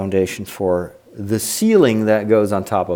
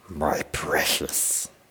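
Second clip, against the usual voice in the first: breathy, whispered creature voice; 6 semitones lower, 10 dB quieter than usual. Answering a comment that mistook the voice for Yoda: Gollum voice. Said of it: "I was trying to do, uh, uh, what's his name? Um, Gollum".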